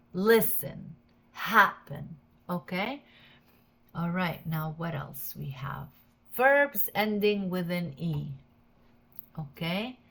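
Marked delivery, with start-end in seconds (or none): 0.2-2.2 first syllable of listen, happen hit harder. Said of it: "here is in the first syllable".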